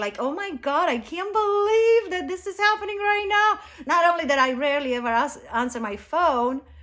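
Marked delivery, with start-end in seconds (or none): 0.2-3.6 mock laughing, pitched-up talk, words broken by laughter. Retelling a phone call, imitating own laughing while talking. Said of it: "I'm laughing like it's a joke".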